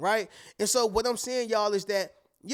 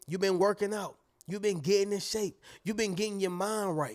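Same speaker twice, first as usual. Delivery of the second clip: ordinary talk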